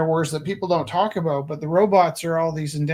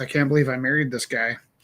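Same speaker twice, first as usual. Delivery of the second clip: put-on muttering under the breath, lower; 3 semitones lower than usual. Retelling what the speaker's wife said: imitating muttering under breath. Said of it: "under her breath".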